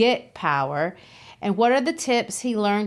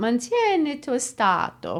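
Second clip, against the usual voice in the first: proper Italian accent and pronunciation on the phrase; 2 semitones higher than usual. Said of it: "your Italian accent a workout".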